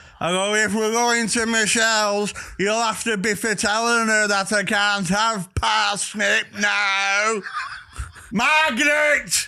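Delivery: mock very high holler, slow and stretched long. Retelling shouting from the couch to the missus working upstairs, a shout. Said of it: "I'll just shout from the couch".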